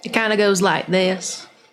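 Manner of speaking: drawn-out southern voice. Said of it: "Get a little southern".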